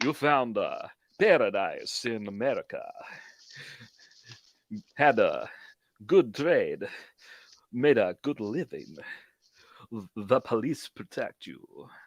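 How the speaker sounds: theatrical vampire count voice. Reading a passage aloud for the others, Dracula voice. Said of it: "I'm gonna read it as Dracula".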